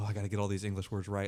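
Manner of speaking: mock nervous, shaking child voice. Imitating kids who treat an English chat like an exam: imitating a nervous shaking kid. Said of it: "start shaking".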